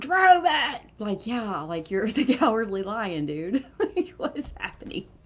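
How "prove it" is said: very high, shrill, angry scream. Retelling how the Cowardly Lion screams at her, mock screaming. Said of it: "he's like screaming at her".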